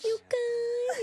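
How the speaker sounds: high-pitched fake sexy voice. Recalling a character's sexy voice with Andre: imitating Shirley's high sexy voice. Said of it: "it's like the higher register stuff".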